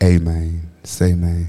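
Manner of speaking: low-pitched North Memphis accent. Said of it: "in your best North Memphis Frazier".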